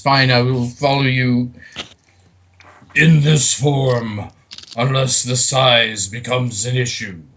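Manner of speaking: loud, deep, big rumbling voice. Voicing Rattel the archfiend's reply to the party, in a rumbling voice. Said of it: "in a rumbling voice".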